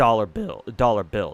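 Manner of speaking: voice cracking on "dollar bills". Explaining what matters more to them than money, the speaker's voice cracks. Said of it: "Sorry, voice crack".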